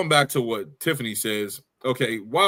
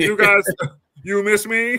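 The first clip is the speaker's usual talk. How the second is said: high, loud voice with drawn-out words; 9 semitones higher, 5 dB louder than usual. Imitating how Nia Jax sounds in her promo: Nia Jax impression. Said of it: "That's what she sounds like".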